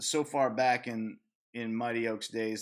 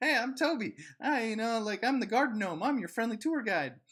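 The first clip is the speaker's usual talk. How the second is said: very high, sunny, friendly tour-guide voice; 12 semitones higher than usual. Retelling own past attempt to greet an angry man: imitating own friendly greeting. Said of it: "trying to be like".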